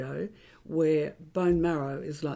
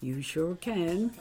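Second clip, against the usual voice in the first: put-on American accent. Recalling meeting her husband, the speaker quotes Heather, imitating Heather's American accent. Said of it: "she said in her American accent".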